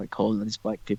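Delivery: ordinary delivery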